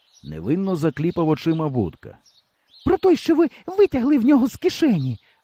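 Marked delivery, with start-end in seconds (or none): 2.9-5.2 very high, exclaimed outburst. Narrator reads a female character exclaiming while pointing at him. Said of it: "Вигукнула Валька".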